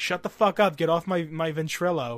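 mock angry female outburst, freaking out. Retelling how a woman on voice chat reacted, imitating her freaking out. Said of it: "she's freaking out".

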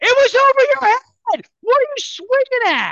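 very high, shrill, loud screaming. Recounting yelling at a player walking back to the dugout, retelling screaming at a player. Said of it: "I'm screaming at him".

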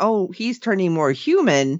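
ordinary talk

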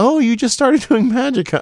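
loud, very high, patronising and condescending tone. Retelling how judges treated a magician: imitating condescending judges.

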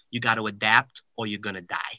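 put-on heavy, thick, laid-on New York accent. Quoting a man he talked with, in the man's thick New York accent. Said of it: "he had like this thick New York accent".

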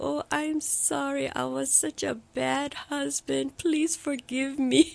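high, slow, weeping, tearful begging tone. Wife retelling her drugged husband's tearful apology, imitating husband crying. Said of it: "he's crying and the tears streaming down".

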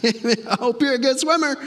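offhand, a bit high. Imagining how Jesus would talk if he spoke the way the world does. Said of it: "Jesus is like".

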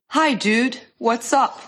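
put-on American accent, played for comic effect. In a role-play, calling a friend on the phone: put-on American accent. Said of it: "I love her impersonation of the American".

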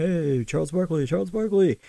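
mock kid's yell, high and calling out. Retelling a kid trying to get someone's attention: imitating a kid yelling. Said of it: "he's yelling".

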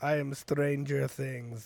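loud, clumsy, fake Russian accent. Having offered to do one, the speaker launches into a russian accent. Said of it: "Let me do a Russian accent".

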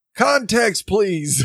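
mock yelling. Recapping a scene, quoting a panicking man yelling through bars, retelling a yell. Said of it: "he yells out the bars".

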